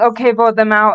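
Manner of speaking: plain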